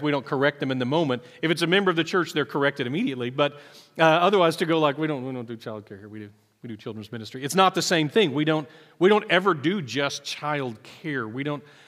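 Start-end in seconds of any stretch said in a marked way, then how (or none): 5.0-7.4 low, soft, quick mutter under the breath. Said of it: "we all just kinda mutter under our breath".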